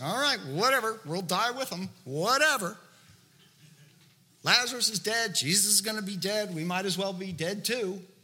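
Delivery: dry, grudging, heavy, dismissive sarcastic tone. Acting out Thomas answering the other disciples: sarcastic Thomas voice. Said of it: "Do you feel the sarcasm in that statement?".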